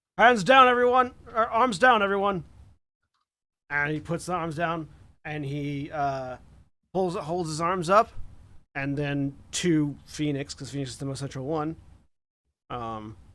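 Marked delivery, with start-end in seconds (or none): 0.2-2.5 very loud, very high calling out. Voicing an officer surrendering to the squad: calling out to everyone. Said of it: "calls out".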